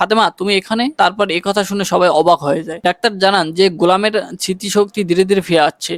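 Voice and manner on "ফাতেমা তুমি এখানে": usual speaking voice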